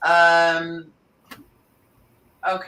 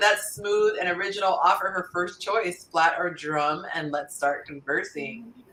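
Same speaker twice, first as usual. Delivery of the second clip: usual speaking voice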